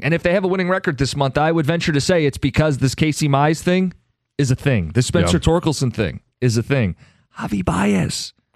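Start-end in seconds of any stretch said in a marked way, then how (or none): 7.4-8.3 high, hushed half-whispered voice. Discussing the team's reinforcements, half-whispering the next player's name. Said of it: "I'm whispering it".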